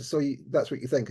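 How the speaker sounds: ordinary talk, nothing marked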